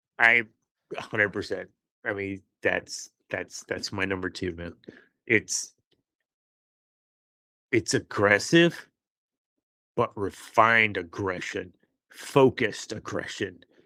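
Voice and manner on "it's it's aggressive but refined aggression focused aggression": growling voice throughout. Speaker talks with another person about Darth Maul, in a growling voice. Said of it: "I don't know why I'm growling my voice while I'm saying it".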